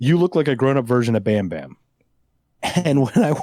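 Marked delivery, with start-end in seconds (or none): none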